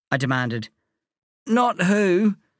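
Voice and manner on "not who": hoarse, higher pitch. A pale friend lying on the doormat answers the narrator's demand, hoarse. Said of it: "Nerf said in a hoarse voice".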